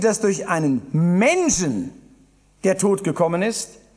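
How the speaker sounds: Menschen clearly stressed.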